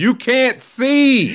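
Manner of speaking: very high, loud put-on shout. Retelling mom calling out from the sideline: imitating mom shouting. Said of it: "my mom just shouting".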